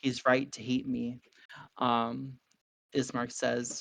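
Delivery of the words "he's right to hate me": soft, half-whispered, under the breath. A man speaks quietly aside to others, half-whispering. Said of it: "he whispers".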